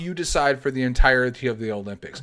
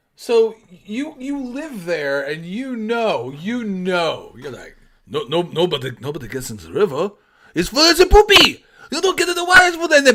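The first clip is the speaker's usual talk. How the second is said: fake French accent with a Russian-accented edge; 4 semitones higher, 4 dB louder than usual. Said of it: "a Russian guy doing a French accent".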